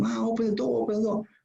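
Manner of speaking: acted-out, very high, piercing screaming. Retelling a man screaming at the door for his mom: imitating someone screaming. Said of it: "he's screaming".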